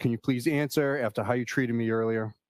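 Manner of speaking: ordinary talk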